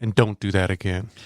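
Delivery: soft, quiet, low, understated delivery. Retelling what a man said while walking away, retelling quiet words. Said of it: "just kind of quietly".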